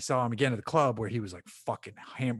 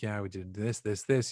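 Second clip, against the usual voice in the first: imitated grave voice; 2 semitones lower than usual. Retelling what Bo said outside the trailer: imitating Bo, solemn. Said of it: "He's being real solemn about it".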